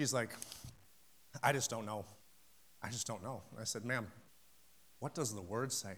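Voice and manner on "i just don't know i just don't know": imitated defeated, disappointed woman's voice, lower, quieter. Retelling a woman's words about past prayers, imitating her disappointed tone. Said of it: "you can hear the tangible disappointment in her voice".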